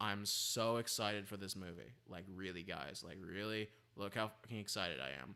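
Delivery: low-pitched, effortless, relaxed delivery. Speaker telling listeners to listen to his voice, flat zero-effort sarcasm. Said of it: "I cannot put an iota of effort into this".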